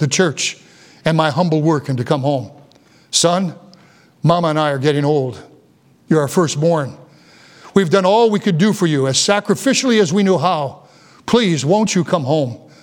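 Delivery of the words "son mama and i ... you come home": put-on heartfelt pleading tone. Recounting his father on the train begging him to come home; imitating his father pleading. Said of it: "he pleaded with me".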